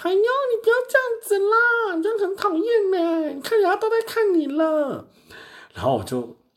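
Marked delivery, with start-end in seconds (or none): 0.0-5.1 loud, very high, very slow, drawn-out clamoring. Retelling a customer who clamored loudly at checkout, retelling loud clamoring. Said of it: "在那边大声嚷嚷".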